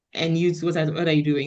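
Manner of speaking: ordinary delivery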